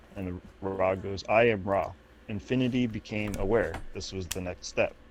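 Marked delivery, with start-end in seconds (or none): none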